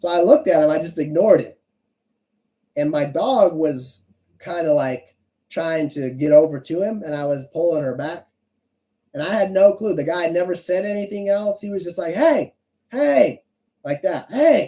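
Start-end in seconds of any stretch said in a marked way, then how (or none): 12.1-13.4 high, raised yell. Retelling a man yelling at the speaker in their own yard, retelling a yell. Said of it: "he's just yelling at me".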